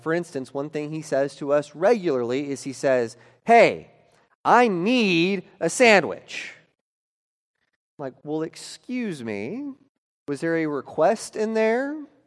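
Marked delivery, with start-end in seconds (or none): 3.4-6.5 put-on very loud, very slow, drawn-out, bossy, demanding child voice. Parent quoting their four-year-old son's demand, imitating demanding four-year-old. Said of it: "he's very demanding".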